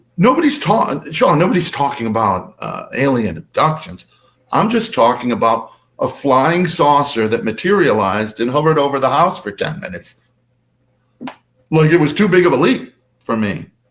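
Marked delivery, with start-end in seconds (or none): none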